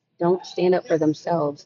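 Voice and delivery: ordinary talk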